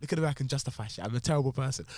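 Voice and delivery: ordinary delivery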